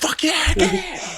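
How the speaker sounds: mock top-of-the-lungs scream, very high, drawn-out. Retelling a son shouting during a game with friends: imitating someone screaming. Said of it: "he's fucking screaming at the top of his lungs".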